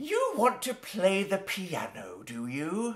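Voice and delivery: soft, patronizing, talking-down woman's voice. Recreating the first time they met, the speaker voices the woman, mock-condescending.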